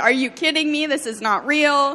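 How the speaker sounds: put-on incredulous outcry, light, disbelieving yell. Retelling how she reacted in disbelief: imitating someone yelling in disbelief. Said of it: "She's yelling".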